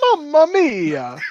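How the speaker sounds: very high, loud cartoonish cry. Cohosts riffing on Mario murdering someone, in the funny Mario voice. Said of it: "in the funny Mario voice".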